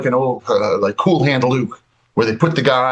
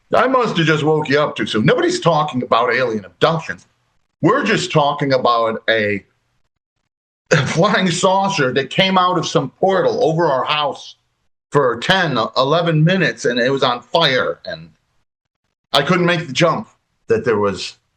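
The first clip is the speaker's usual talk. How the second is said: ordinary talk, nothing marked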